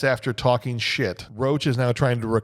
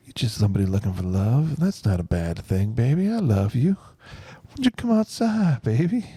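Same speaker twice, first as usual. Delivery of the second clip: sexy put-on whisper. Acting out the scene where Billy calls to Cordelia: sexy Billy Zane whisper. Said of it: "the sexy Billy Zane whispers".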